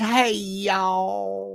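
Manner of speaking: Southern drawl with "y'all" drawn out.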